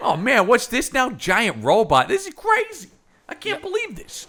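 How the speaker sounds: very loud, high amazement with big swooping pitch. Imitating a police officer reacting to a giant robot: Michael Rapaport impression. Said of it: "Michael Rapaport in a police uniform going".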